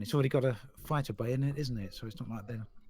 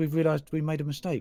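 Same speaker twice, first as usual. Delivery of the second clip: ordinary talk, nothing marked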